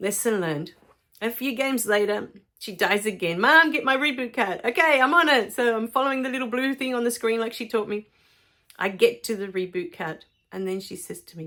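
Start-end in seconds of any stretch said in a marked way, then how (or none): 3.4-4.6 pitched-up, high, urgent yelling. A mom retells the girl yelling at her as time runs out, imitating urgent yelling. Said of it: "she's yelling at me because we're running out of time".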